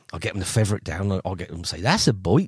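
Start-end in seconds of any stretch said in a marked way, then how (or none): 1.8-2.4 slight put-on New Forest accent. Showing how the pupils are taught to say it: put-on New Forest accent. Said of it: "I get 'em all to say my little New Forest accent".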